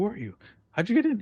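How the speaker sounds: very high-pitched, bewildered, confused voice. Narrating a game scene where the player ran past a guard: confused guard. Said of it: "and he's, like, confused".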